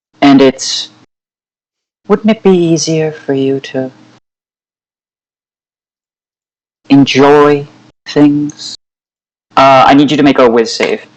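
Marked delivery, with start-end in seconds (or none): 2.1-8.8 sweet, serene, motherly voice. Voicing a voice that speaks to Rex: sweet serene maternal voice. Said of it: "sweet, um, serene, reminds you almost of a maternal figure".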